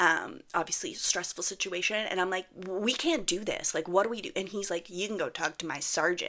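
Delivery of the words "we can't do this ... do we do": acted pleading voice through tears. Retelling pleading with a man while your daughter cried; retelling a crying plea. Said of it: "i've started crying at this point".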